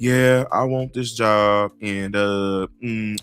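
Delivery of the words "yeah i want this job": very low, listless, flat, zero-enthusiasm drone. Mocking a job interview answer: mock unenthusiastic tone. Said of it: "you want me to sound like non-enthusiastic?".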